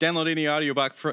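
rapid-fire delivery. A podcast host attempts an Audible ad read, super fast talking. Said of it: "I tried to do it super fast".

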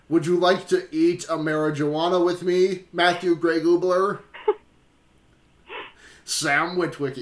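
level, flat, monotone robot-hero voice. Joking around with a co-host, riffing lines in an Optimus Prime voice. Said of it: "This is just turning into my Optimus Prime voice".

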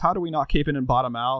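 ordinary delivery

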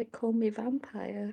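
very soft, hushed, sad and wistful. Speaking as his character, sounding sad and wistful. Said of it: "it sounded so sad".

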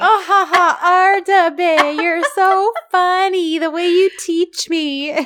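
very high, shrill, loud, overdone fake laugh. Retelling a drama scene, imitating loud fake laughter. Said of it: "very loud, very fake laughter in the background".

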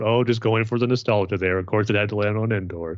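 ordinary delivery

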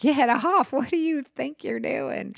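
put-on hysterical laughter through words, high and slow. Retelling being jumped in a business meeting, imitating own hysterical laughing reply.

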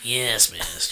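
very low, deep, hushed murmur. Brainstorming a character name, the speaker gives the servant's line in Igor hunchbacked servant voice. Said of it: "You have a hunch".

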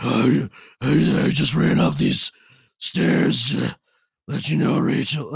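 loud, overdone, very gravelly rough voice.

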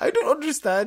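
high, bad European accent slipping into Indian accent.

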